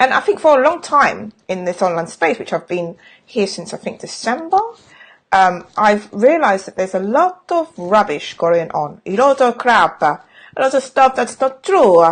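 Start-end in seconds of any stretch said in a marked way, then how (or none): 9.1-12.0 bad, badly done put-on Italian accent. Talking about the online space, the speaker tries out a bad fake Italian accent. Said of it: "that's my accent, that's Italian".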